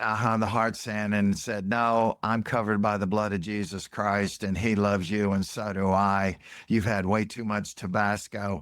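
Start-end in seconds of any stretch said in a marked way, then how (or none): none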